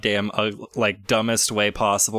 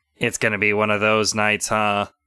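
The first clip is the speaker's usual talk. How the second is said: mechanical robot voice. Voicing the robot that asks the players their names, in a robotic voice. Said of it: "this robotic voice comes out".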